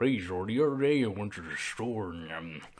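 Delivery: exaggerated, very low, soft, barely intelligible mumble. Retelling what a guy said, in an exaggerated unintelligible voice. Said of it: "This guy's voice was that unintelligible".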